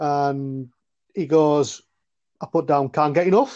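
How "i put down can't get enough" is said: put-on strong male Scouse accent. Retelling a conversation with Brian, the speaker quotes him in a strong Scouse accent. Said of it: "he goes in a very strong Scouse accent".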